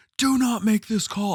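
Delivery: put-on very high, shrill, loud scream. Retelling yelling at the table judge: imitating own screaming. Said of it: "I'm screaming".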